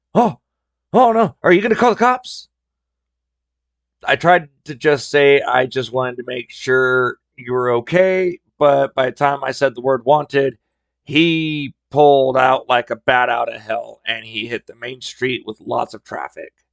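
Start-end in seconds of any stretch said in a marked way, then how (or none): 0.2-2.5 high, sudden panicked blurt. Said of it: "immediately panicked and said".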